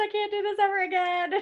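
put-on panicked voice. Retelling a scary drive, imitating own past panic. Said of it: "I was panicking majorly".

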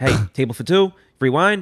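put-on thick Italian-American accent. Retelling how a restaurant hustler pulls people in: imitating Tommy DeNose, thick Italian-American accent. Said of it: "this very thick Italian-American accent".

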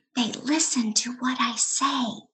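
hushed whisper. Narrator reads a girl's secret to her cousin on a city tour: whispering. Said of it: "she whispers to her cousin".

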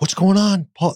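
mock piercing scream, very high pitched. Retelling the wife opening the door and calling out, retelling a scream. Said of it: "You know, screaming".

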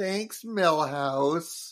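put-on sarcastic tone. Recapping an episode, voicing the twins' reply to Milhouse, mock-sarcastic. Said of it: "the twins sarcastically like".

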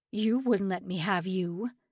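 snarling, bitter, menacing snarl. Narrator voicing the assistant director as he grabs Hannah's arm, snarling. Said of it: "he snarled".

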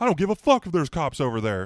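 very high, loud, swooping shrieking scream. Imagining what a man shouted at police: imitating someone screaming. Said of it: "And he just screams".

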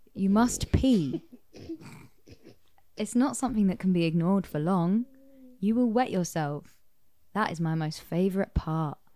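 TV commercial narrator voiceover delivery. Reading a game card aloud, like an M&S advert. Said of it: "It's like an M and S advert".

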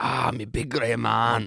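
put-on Scottish accent. Speaker says something sounds like a Scottish person, then demonstrates in a mock Scottish accent. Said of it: "it sounds like a Scottish person".

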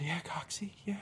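high, teary, weepy whisper.

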